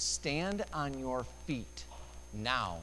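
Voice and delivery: mock stern, hard, slow delivery. Retelling someone's testimony of being spoken to, retelling a stern, hard voice. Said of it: "Jesus said in a stern, hard voice".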